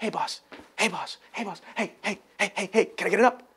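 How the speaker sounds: eager, soft, pleading little-dog puppy voice. Telling how he would act to get into the BDC, in a begging little dog voice. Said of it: "You ever see the little dogs like Fido".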